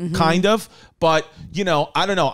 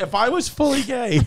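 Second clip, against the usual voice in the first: cracking, breaking voice mid-phrase; 7 semitones higher than usual. Admitting something while laughing with the others, voice cracking. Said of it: "I love that your voice cracked".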